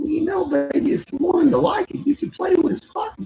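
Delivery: very high-pitched character voice. Retelling a comedy bit, acting out the mom: impersonating the mom character. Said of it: "I do a good impersonation of that".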